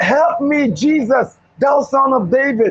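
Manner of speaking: slow, long, drawn-out, stretched-out cry. Retelling a man crying out to Jesus: imitating a man screaming. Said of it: "He was screaming and he was saying".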